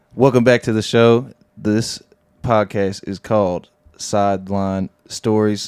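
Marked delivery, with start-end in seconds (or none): 1.6-5.7 flat, slow, mechanical robotic voice. Introducing the podcast by name: robotic voice. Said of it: "I sound like a robot".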